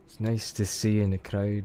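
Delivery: trying out a put-on Scottish accent. Repeating the other speaker's greeting to the crowd: Scottish accent. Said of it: "Stop the Scottish accent".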